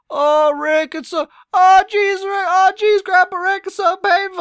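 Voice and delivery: bad cartoon voice. Reacting to other people's videos, slipping into a bad Rick and Morty voice. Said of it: "I haven't done my Rick and Morty voice".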